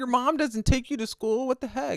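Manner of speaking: high, shocked, stunned disbelief and amazement. Imagining what students said about walking in that weather: imitating a shocked classmate. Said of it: "They're probably like".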